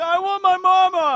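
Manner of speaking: blubbering, very high, very loud, very slow wail. Acting out a comic scene imitating Weevil: imitating Weevil crying. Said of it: "he's crying 'cause he misses his mama".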